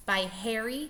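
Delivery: ordinary delivery, nothing marked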